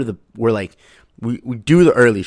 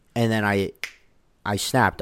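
usual speaking voice

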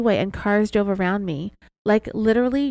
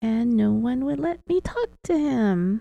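put-on strange, weird whisper; 2 semitones higher than usual. Retelling a suspect's words to an investigator: imitating a weird whisper. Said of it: "In a weird whisper".

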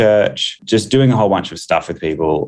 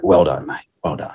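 mock gruff masculine voice. Retelling what a friend's dad said with a handshake: imitating a gruff, manly man. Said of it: "very manly and gruff".

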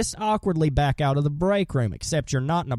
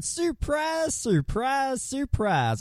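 bad put-on southern voice, much higher and slower; 9 semitones higher than usual. Speaker introducing the next item, doing a bad Gomer impression. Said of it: "I know that was a bad Gomer impression".

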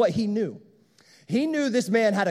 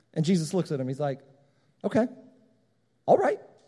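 ordinary talk, nothing marked

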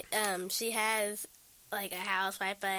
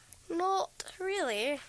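put-on British accent, pitched up; 8 semitones higher than usual. Answering a question about music videos: British accent. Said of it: "What's up with the British accent?".

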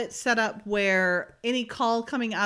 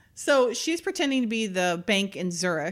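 ordinary talk, nothing marked

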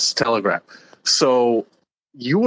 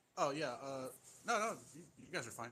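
barely audible, very soft and faint voice; 4 semitones higher, 24 dB quieter than usual. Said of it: "you're kinda quiet, buddy".

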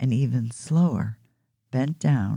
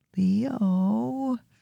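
high, drawn-out, whining voice; 9 semitones higher than usual. Narrator reads a child calling to her brother in the dark, whining. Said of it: "Daisy whined".

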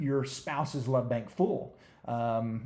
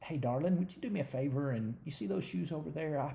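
sweet, gentle, soft tone, much quieter; 6 dB quieter than usual. Advising on how to come across better, speaker demonstrates a sweet, gentle request. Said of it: "you may have to come across going".

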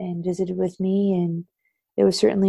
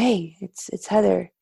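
mock breathless delivery. Retelling a phone call from Heather, imitating Heather out of breath. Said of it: "And she was out of breath".

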